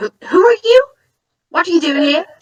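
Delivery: very high, rushed, jittery, startled voice. Voicing Frank, a soldier meeting a stranger: jumpy Frank voice. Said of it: "Frank is, like, kinda jumpy".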